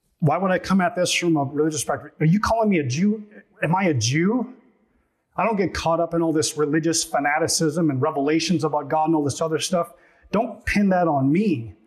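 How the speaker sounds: ordinary delivery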